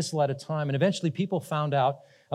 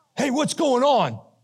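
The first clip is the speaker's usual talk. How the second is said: put-on, high, really angry, confrontational voice; 9 semitones higher, 4 dB louder than usual. Retelling how a man jumped out and spoke, imitating a really angry voice. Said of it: "in a really angry voice and said, ... Just like that".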